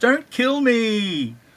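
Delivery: put-on high scream with me drawn out. Joining in acting the comic character's line: acted screaming. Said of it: "he's screaming it".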